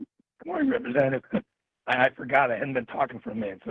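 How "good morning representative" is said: shot voice jumping suddenly high. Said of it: "I forgot how bad my voice is".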